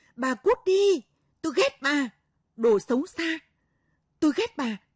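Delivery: enraged scream, very high pitched and very loud. A daughter turns on the woman who called her badly raised: screaming. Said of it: "quắc mắt gào lên".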